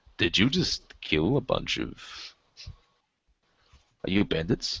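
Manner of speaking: suspicious, distrustful, wary, probing delivery. Voicing a character questioning strangers by a wreck: acting very suspicious. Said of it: "he's just really suspicious right now".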